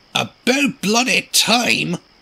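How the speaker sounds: groaning. Narrating a story, Duncan can finally leave after night falls; groaned. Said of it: "Duncan groaned as he rolled away".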